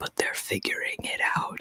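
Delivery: hushed, very soft, leaning-in whisper. Imitating Joe Biden leaning in to whisper mid-talk: Joe Biden whisper. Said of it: "lean in and whisper and he'll be like".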